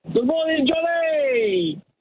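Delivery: loud, big voice. Asked to say good morning on a count of three, in a big, loud voice. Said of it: "in a big, loud voice".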